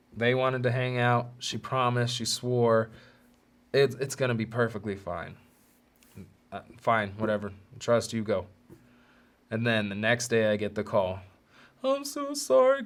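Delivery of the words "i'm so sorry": put-on, very high, tearful crying voice. Retelling a girlfriend's phone call confessing she cheated: imitating someone crying.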